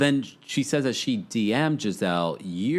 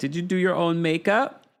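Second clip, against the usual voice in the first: higher-pitched put-on American accent; 8 semitones higher than usual. Retelling a conversation about makeup, in [name]'s put-on American accent. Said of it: "[name] puts on her American accent".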